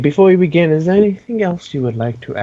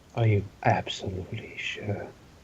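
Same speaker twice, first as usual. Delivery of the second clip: hushed, breathy, evil villain whisper; 7 semitones lower, 13 dB quieter than usual. Answering a player who asks about a wish rule: evil voice. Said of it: "he's doing his evil voice".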